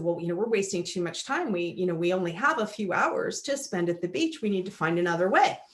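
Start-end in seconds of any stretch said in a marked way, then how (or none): none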